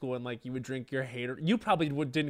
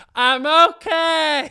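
put-on acted slurring, words running together, very high, loud; 15 dB louder than usual. Retelling how she drove past in a go-kart, imitating her slurred speech. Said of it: "being slurring".

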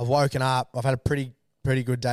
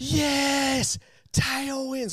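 put-on very high giddy whoop, yes stretched out; 13 semitones higher than usual. Retelling arriving at the start line at four in the morning: retelling own screaming. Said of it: "Like, screaming".

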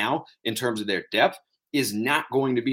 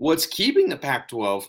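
voice cracking and breaking; 3 semitones higher than usual. Analyzing why the pac-12 misses the playoff, voice cracking. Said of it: "nice little voice crack there".

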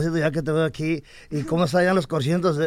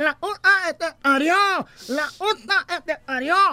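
put-on angry nasal man's yelling, higher; 13 semitones higher than usual. Retelling a car crash, speaker imitates the nasal-voiced man who hit him yelling: imitating an angry nasal-voiced man yelling. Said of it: "todo enojado se baja y me empieza a gritar".

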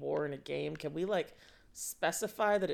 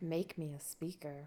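mock software startup computer voice; 6 dB quieter than usual. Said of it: "Software starting up voice".

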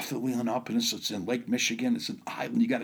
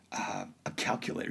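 breathy, whispered, barely-there little reply; 4 semitones lower, 6 dB quieter than usual. Retelling a child's answer about his backpack: imitating someone speaking real quiet. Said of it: "He says real quiet".

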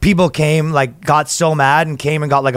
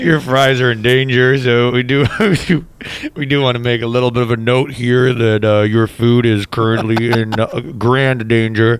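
low, fake public address announcement voice; 4 semitones lower than usual. Joking about a waiter's announcement over the loudspeakers: mock loudspeaker announcement. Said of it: "Announcement over the loudspeakers".

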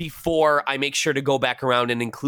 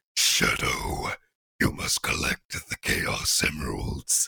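deep, demonic alien voice; 13 semitones lower, 5 dB quieter than usual. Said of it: "a deep demonic voice that's not of this world".

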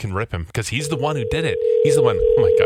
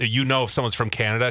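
usual speaking voice

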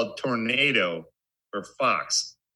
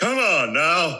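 put-on deeper authority-figure voice, louder; 5 semitones higher, 5 dB louder than usual. Imitating an actor trying to sound like an older authority figure: Keanu Reeves impression, deeper voice. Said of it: "I'm trying to use a deeper voice".

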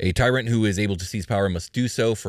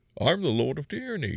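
villainous, menacing, pitched-up voice; 8 semitones higher, 3 dB quieter than usual. Trying out a voice for co-hosts who judge it: Bane voice. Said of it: "that's not a bad Bane voice".

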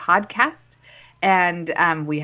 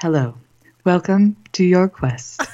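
gentle, welcoming, soothing, calm guide voice. Host welcomes listeners to the quest in a soothing guide voice. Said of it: "I just felt like that was a guide voice".

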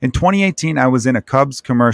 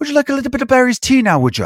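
put-on very high, weird old Irish granny accent; 12 semitones higher than usual. In a silly mood, offering Barry's tea: weird old Irish grandmother accent. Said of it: "That almost like weird Boston / old Irish grandmother".

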